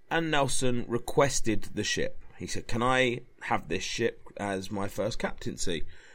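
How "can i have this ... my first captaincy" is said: ordinary delivery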